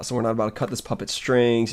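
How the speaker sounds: ordinary delivery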